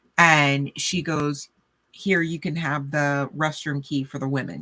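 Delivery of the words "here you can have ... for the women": ordinary talk, nothing marked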